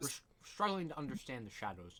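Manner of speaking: mouth full, chewing between words. In a group conversation, speaker answers while talking with food in mouth. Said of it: "I have food in my mouth".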